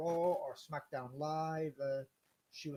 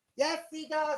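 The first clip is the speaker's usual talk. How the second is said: shrill, very high, very loud put-on grandma voice; 14 semitones higher, 9 dB louder than usual. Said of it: "that's me putting on my grandma voice once again".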